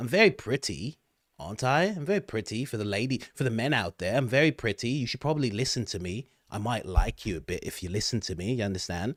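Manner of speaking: put-on British-accented voice. Talking to viewers, the speaker puts on a british accent. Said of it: "me saying I'm pretty, um, in a British accent".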